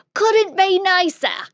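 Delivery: loud, high-pitched put-on English accent. Giving an example line for an alphabet game: english accent. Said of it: "the extent of my English accent".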